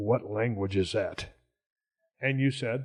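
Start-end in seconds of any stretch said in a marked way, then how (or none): 0.0-1.3 very quiet, hushed, lower pitch. Telling the others about asking her something: retelling a very quiet question. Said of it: "I very quietly said".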